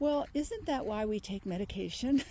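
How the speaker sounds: normal talking voice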